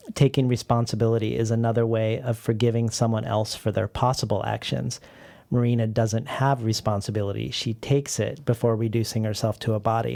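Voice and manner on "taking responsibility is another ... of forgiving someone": usual speaking voice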